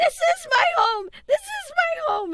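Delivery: put-on worked-up old woman's voice, very high, loud, agitated. Voicing an old woman who overhears the party: really worked up. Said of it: "she starts to really get worked up".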